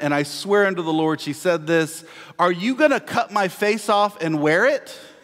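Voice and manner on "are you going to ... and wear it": acted, stagy declaiming in a mild theatre voice. A parent retells the words their daughter said to a man, imitating loud speaking. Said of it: "spoke very loudly and said to him".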